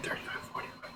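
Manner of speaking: soft, low-volume whispered delivery.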